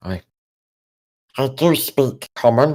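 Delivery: small kobold-like cave-creature voice. Voicing a small kobold who shrugs free of a larger kobold's grasp, Gollum voice. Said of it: "it's Gollum".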